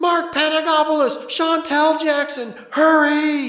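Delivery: very high, piercing loudspeaker shriek, drawn-out, hurried. Over the loudspeakers, a girl calls two contestants to hurry: high-pitched girl's shriek. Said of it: "A high-pitched girl's voice shrieked".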